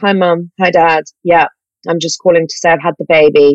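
plain

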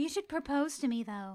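high, breathy voice. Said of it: "she talks in a high, wispy voice".

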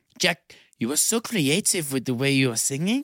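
put-on French accent. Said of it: "Is that French accent".

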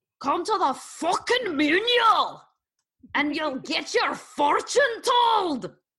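put-on Scottish-accented delivery. Signing off to everyone and inviting them to Thursday's event, in a Scottish accent. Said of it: "That was Scottish".

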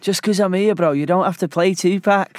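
high imitated Manchester accent. Retelling what the other speaker said in the shower: imitating a friend's Manchester accent. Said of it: "I love your accent of me".

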